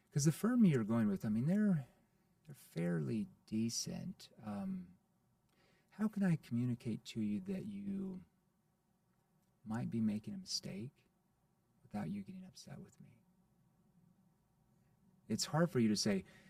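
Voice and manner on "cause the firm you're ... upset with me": gently worried, concerned, caring tone. Showing how to ask a prospect about a possible mistake: concerned tone. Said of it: "why would I use a concerned tone there".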